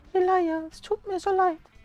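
very high-pitched, faked female voice. Speaker voices a woman's words to Elijah: put-on female voice. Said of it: "ich mache einfach mal eine Frauenstimme".

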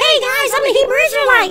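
very high-pitched put-on voice. Joking about how a voice-modulated man really sounds, in a real high-pitched voice. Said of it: "he's got like one of those real high-pitched voices".

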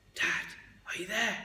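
gentle, quiet calling voice. Narrator at the caravan door calling out for Dad, said softly. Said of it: "I said softly".

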